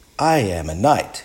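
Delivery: ordinary delivery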